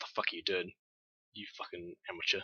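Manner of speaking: very quiet, angry growled words. Game master voicing the captain speaking to the rifle boy after a miss, growling. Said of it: "the captain going to growls at him like".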